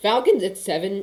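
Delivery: voice cracking, breaking in pitch. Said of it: "I just had a big voice crack".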